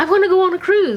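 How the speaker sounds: mock excited voice, high and fast, eagerly gushing.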